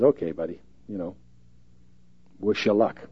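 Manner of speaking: quiet, soft, low murmur under the breath. Retelling the prophet's reply to another prophet during a Bible reading, spoken quietly. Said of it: "He just quietly says".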